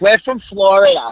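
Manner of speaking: put-on New York accent. Imitating the speaker's mom telling someone they're from Florida, New York accent. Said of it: "she says it in the New York accent she has".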